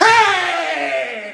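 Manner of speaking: furious, shrill, drawn-out shout, very loud and high. Showing how you react when someone cuts you off in traffic: mad shout with enthusiasm. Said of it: "get mad with a lot more enthusiasm".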